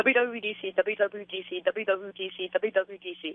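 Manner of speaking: very fast, rapid-fire tongue-twister delivery. A caller takes the hosts' challenge to say it five times fast, very fast. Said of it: "And it has to be fast".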